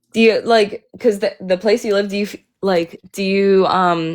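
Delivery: halting, stumbling restarts, stuttering and tripping over words. Speaker stumbles through a question to the other person, stuttering. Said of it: "I'm like stuttering".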